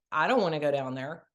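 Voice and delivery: ordinary talk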